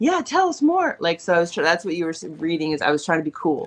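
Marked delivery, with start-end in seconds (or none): 0.0-1.0 very high, over-eager gushing mom voice. Showing how an over-eager mom would sound: put-on over-enthusiastic mom. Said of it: "all enthusiastic".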